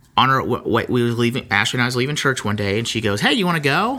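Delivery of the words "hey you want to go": mock light, half-kidding, pitched-up questioning tone. Leaving church, speaker retells a woman's question, imitating her asking jokingly. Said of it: "And kind of jokingly".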